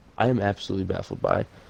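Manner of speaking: normal talking voice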